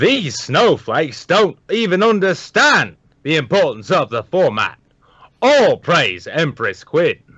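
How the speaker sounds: high, slow, drawn-out reading with big swoops. Reading out a viewer's donation message as asked: Paul Joseph Watson impression. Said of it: "to read in his best, Paul Joseph Watson".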